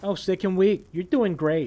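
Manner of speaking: put-on passive-aggressive New York mom voice.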